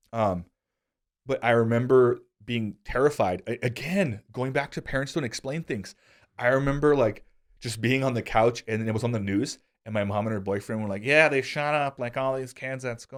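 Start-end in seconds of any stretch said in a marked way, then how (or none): 11.0-13.1 voice with words slightly slurred. Retelling what mom said while the news was on, imitating mom's voice. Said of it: "You like my mom voice?".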